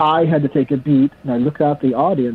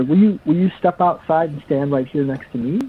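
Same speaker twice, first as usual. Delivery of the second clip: ordinary delivery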